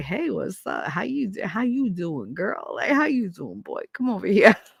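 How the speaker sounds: put-on, slick, smooth, charming patter. Retelling how flirting goes on Demerol: imitating own smooth flirting. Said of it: "I get very Rico Suave".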